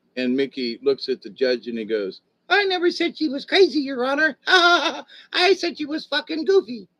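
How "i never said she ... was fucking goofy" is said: badly done, very high cartoon squeak. Telling a joke, the speaker gives Mickey's reply to the judge in a Mickey Mouse impression. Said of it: "My bad impression".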